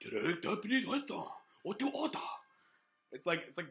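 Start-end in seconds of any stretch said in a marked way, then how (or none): 0.0-2.2 breathy put-on Japanese accent, pitched up. Comparing restaurant phone greetings: breathy put-on japanese accent. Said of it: "more breathy and shit".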